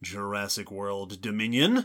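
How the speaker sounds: dramatic, foreboding, low, hushed ominous tone. A host plugging their show's episodes, saying a title in an ominous, dramatic tone. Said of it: "in a tone of voice that is either ominous or dramatic".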